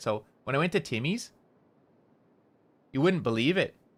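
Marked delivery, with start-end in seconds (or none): 0.0-1.3 tone lifts at the end of Timmy's. Showing how the tone rises before pauses, rising pitch on Timmy's. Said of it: "at the end of those like pauses, we do like a little we like raise the tone a little bit".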